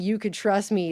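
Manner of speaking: usual speaking voice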